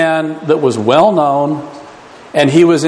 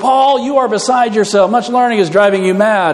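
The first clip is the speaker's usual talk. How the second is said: put-on sudden, high, blurted outburst; 5 semitones higher than usual. Speaker acting out Festus's reply to Paul, in a loud voice. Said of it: "he comes out with a loud voice".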